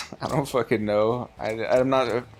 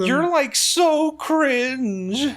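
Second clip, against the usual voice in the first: put-on very high, girly teenage girl voice; 4 dB louder than usual. Mimicking how a teenage girl character talks, imitating a teenage girl. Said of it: "She sounds more like she's like a teenage girl".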